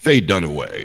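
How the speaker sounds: announcer-style movie trailer read. Reading out a film's cast names, the speaker uses a movie trailer voice. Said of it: "that's my trailer voice".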